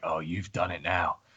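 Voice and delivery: muttered under breath. Voicing a character reacting in a game scene: muttered under his breath. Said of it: "under his breath".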